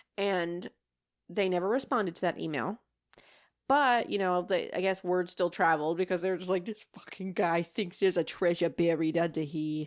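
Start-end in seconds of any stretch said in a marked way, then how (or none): 6.7-9.9 put-on rough, vague Boston or New York accent. Quoting what others said about the speaker, in a boston or new york accent. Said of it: "Was that Boston or New York? I don't know what accent I just did".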